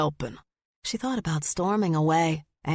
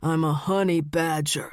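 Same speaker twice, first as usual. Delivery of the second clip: voice dropped even lower. Reading a character mocking another's expected reply: voice dropped even lower. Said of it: "he dropped his low voice even lower".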